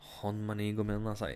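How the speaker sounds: ordinary delivery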